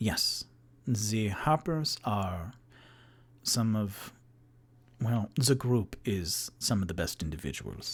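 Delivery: put-on French-accented speech. Recounting a game session, voicing Ago giving a plot point; Ago's French accent. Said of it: "Ago with the French accent".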